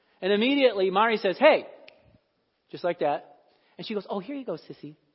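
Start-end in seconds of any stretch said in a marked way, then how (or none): 4.1-5.0 put-on sugary little voice, soft and sweet. Retelling a girl handing a toy back to the other girl, imitating a little sweet voice. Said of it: "This little sweet voice".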